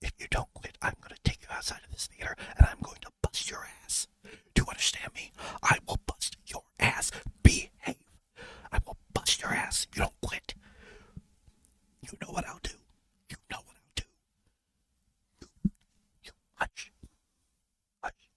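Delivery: threatening whisper, right up close in the ear. Retelling how she scolded him at a movie theater, imitating a threat said in the ear. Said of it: "She would do it right in our ears".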